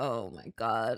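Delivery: very low muttering under the breath. Retelling a reaction to an annoying line in a movie: retelling muttering under breath. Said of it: "I just was under my breath".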